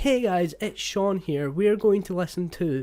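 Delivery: put-on posh American accent, high. Retelling how they used to start videos: imitating own old Americanized posh accent. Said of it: "Americanizing myself and, like, make myself more posh".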